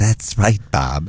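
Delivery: put-on lispy voice. Retelling a talk about Nutrisystem, the speaker quotes the man's reply imitating John's lispy voice. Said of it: "He had that lispy voice".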